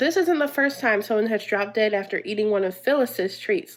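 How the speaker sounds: ordinary delivery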